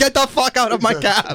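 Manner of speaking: mock very high, shrill, furious angry outburst. Retelling what a cab driver yelled at a passenger: imitating a cab driver flipping out. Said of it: "the cab driver flipped out".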